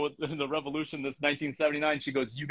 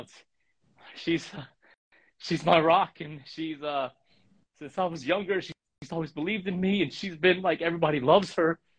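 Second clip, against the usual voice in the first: emotional words stopping, restarting, breaking mid-phrase; 2 semitones higher than usual. Asking the audience for prayers for a woman who is her rock, emotional. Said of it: "I get a little emotional right now".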